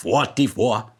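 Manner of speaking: bad Jamaican accent. Trying out a number in a rubbish Jamaican accent. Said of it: "That's probably a rubbish Jamaican accent".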